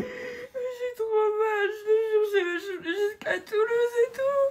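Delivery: crying while talking. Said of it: "arrête de pleurer".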